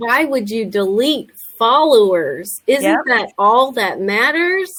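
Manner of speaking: put-on sarcastic, rhetorical tone. Asking the other speaker a question about deleting followers: put-on sarcastic question. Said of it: "that was sarcastic".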